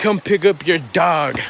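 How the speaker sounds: put-on angry tone. Retelling a woman's surprise phone call, imitating an angry tone. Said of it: "in a kind of an angry tone".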